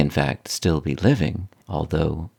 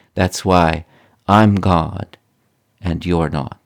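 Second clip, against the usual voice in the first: soft, kindly delivery; 4 dB louder than usual. Speaker retells what Father said, leaning across the desk, retelling a kind, soft voice. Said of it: "in a very kind, soft voice said".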